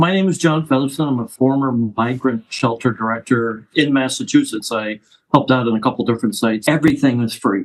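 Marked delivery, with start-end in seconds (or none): 6.7-7.6 stress on the word everything. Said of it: "I cannot stress the word everything is free".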